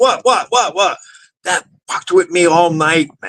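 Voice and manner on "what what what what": short, sharp, high-pitched snapping. Retelling how the speaker snapped at an elderly lady who walked in; retelling snapping at someone. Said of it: "I snapped at her like".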